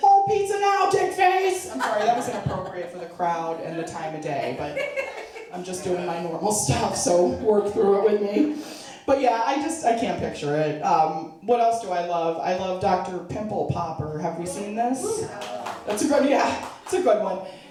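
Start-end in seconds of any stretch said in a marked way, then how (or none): 0.0-1.7 high, loud yelling. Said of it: "yelling to my partner".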